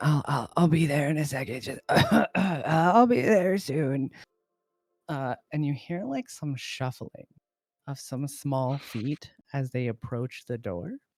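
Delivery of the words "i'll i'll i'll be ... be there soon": put-on older-sounding voice, higher and louder. Narrating a scene, voice someone inside a shack answering a knock, in an older voice. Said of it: "you hear a like older voice".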